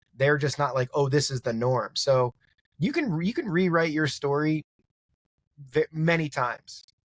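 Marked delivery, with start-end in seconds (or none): none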